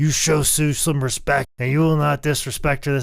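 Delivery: mock screaming. Recounting a man screaming at John Silver for being rude to Sue, retelling someone screaming. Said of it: "I just screaming at John Silver".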